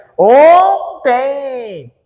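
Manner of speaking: ontem with pinched nose.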